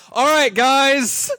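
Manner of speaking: squeaky very high voice, "guys" stretched out. Mimicking how the other speaker just wrapped up: imitating the other speaker. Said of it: "She's just like".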